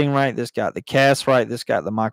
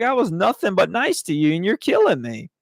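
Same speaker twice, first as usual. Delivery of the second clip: loud, swooping, put-on screaming yell; 7 semitones higher than usual. Retelling a movie scene where a man is being drowned: imitating someone screaming and yelling. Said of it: "screaming and yelling at him like".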